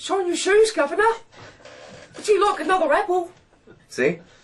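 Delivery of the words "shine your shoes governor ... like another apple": very high, loud, bad English accent. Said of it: "let me just try the English accent".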